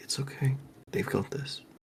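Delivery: soft, soothing, reassuring, comforting whisper. Playing a character who whispers to a companion in a game scene, comforting whisper. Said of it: "whisper in like a very comforting kind of voice".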